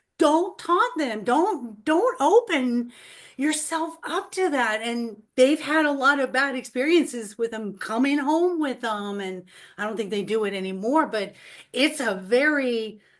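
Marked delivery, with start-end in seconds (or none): 0.2-4.8 put-on loud yelling. Retelling watching ghost hunters call out spirits: imitating yelling at the TV. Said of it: "I'm literally yelling at the T V".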